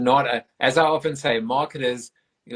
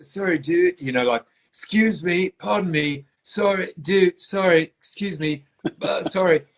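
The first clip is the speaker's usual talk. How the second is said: high-pitched, laid-back put-on surfer dude voice; 6 semitones higher than usual. Retelling a guy squeezing past people at a lecture, doing a Bill and Ted impression. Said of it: "I'm gonna do like a bit of like a, you know, Bill and Ted's like".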